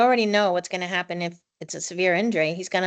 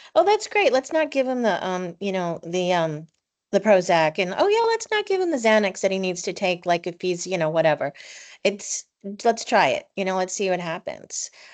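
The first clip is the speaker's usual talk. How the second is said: ordinary delivery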